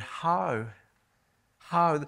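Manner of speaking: heavy stress on the word how. Speaker teaching on verse 5 to listeners, putting stress on 'how'. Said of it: "I simply want to stress that word".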